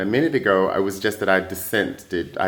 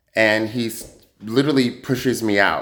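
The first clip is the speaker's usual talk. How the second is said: usual speaking voice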